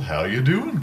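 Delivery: light, playful, jokey tone. Describing a voice from the other bathroom stall: imitating a playful tone.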